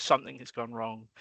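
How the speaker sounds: ordinary talk, nothing marked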